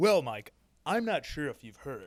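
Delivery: throaty, guttural stoner-style voice. Retrying an impression of the other speaker, more guttural: guttural stonerish impression of co-host. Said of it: "you have to go a little more guttural".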